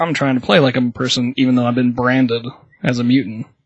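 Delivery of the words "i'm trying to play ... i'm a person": usual speaking voice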